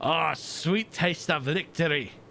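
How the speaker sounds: poorly done, put-on Scottish accent. Celebrating defeating a sub and torpedo, in a poor scottish accent. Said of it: "I just said that with a Scottish accent".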